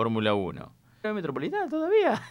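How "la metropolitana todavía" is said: very high-pitched, sharp, squeaky tone. Speaker acts out how a friend would ask this, high-pitched imitation of a friend. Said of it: "Así muy agudo".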